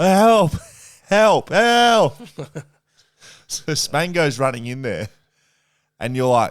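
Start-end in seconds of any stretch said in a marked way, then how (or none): 0.0-2.2 shrill, very high, full-volume wailing cry. Retelling how someone yelled from the shower, imitating someone wailing for help. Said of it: "start yelling and like almost wailing, like crying out".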